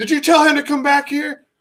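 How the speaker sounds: shrill, high-pitched scream. Retelling the counter lady screaming out the door: retelling a scream. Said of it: "she screams out the door".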